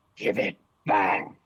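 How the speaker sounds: low monster-like dragon voice. Mid-fight, a voice comes from the dragon itself, not the puppet: dragon voice. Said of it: "you hear a voice, not coming from the puppet, from the dragon itself".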